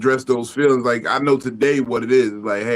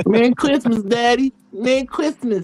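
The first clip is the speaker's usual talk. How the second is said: put-on voice, pitched very high; 12 semitones higher than usual. Retelling what a woman said on returning, sounding like Mike Tyson. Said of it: "why your prostitute sound like Mike Tyson?".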